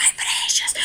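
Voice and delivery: frantic, panicked, lost-sounding whisper. Retelling how the creature searches for his lost ring: imitating Gollum freaking out. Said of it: "he's freaking out".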